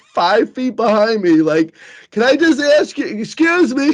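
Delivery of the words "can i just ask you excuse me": play-acted, high, insistent woman's yell. Retelling a woman following from behind on the street: imitating a woman yelling. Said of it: "as she's, like, yelling at me".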